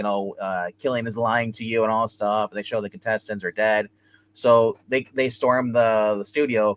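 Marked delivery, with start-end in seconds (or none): none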